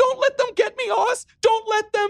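very high, wild, crazed, frantic desperation. She calls to oz over the phone line: voice rising to a high, crazy note. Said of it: "Her voice rose to a high, crazy note".

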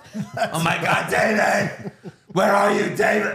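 high, long, stretched-out calling yell. Retelling a movie scene where the coworker yells for David: imitating Harvey Fierstein yelling. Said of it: "so I don't have to quote him".

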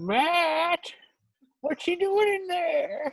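put-on squeaky, very high grandmother voice, word stretched long. Retelling what she said at Matt's door, in Grandma Sarazen impression. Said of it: "do your best Grandma Sarazen impression".

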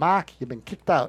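put-on Boston accent on the line. Retelling what the dean of students said: imitating a boston accent. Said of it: "he had a, a Bostonian accent".

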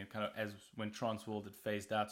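ordinary delivery

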